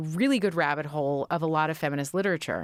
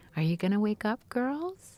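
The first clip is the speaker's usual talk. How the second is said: beautiful, gentle, pitched-up voice; 5 semitones higher than usual. Retelling how mom gently woke the girls each morning: imitating mom's beautiful gentle voice. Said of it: "in that beautiful voice of my mom's".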